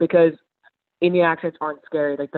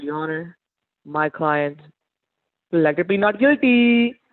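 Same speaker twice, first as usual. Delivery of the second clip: slow, drawn-out, put-on Indian accent. Acting out a lawyer addressing the judge at a murder trial, in an Indian accent. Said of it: "you pop in an Indian accent".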